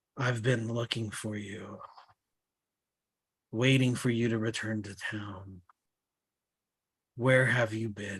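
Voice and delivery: dark, low, hushed, menacing, ominous murmur. The narrator voices a cloaked woman addressing a traveler, low ominous woman's voice. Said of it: "low and ominous".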